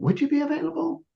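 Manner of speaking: very high, unsure, doubtful rising tone. Playing back how the listener set an appointment: imitating a high, doubtful tone. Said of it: "you went in a high in a high tone".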